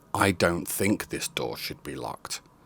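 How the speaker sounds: heavy stress on "I don't think". Quoting a line about a post office door, stress on i don't think. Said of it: "Emphasis on the first three words".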